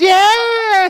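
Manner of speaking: put-on excited, very high, loud babyish shout.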